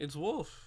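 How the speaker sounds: voice cracking and breaking mid-word. Opening a late live stream by introducing oneself, voice crack. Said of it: "voice crack".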